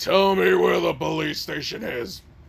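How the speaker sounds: rough, creaky, throat-scraping giant monster voice. Describing a giant hooded figure demanding something of three girls: giant hooded figure's voice. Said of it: "that voice was not good for my throat".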